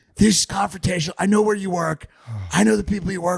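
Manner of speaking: raspy, guttural voice. Retelling a woman answering people's questions, imitating a raspy, guttural voice. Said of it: "she had this like raspy, guttural voice".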